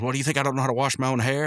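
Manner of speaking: mock angry outburst. Retelling a cartoon scene where Rigby snaps at Mordecai: retelling an angry outburst. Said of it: "Rigby's gonna go off on him again".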